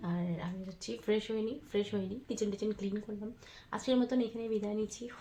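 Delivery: speaking softly. Talking at midnight while everyone is asleep: speaking softly. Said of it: "তাই আস্তে কথা বলছি".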